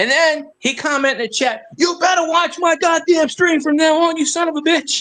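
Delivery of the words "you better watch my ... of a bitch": play-acted, heated, screaming rant. Retelling an angry chat message from a streamer: imitating someone screaming. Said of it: "screaming at me".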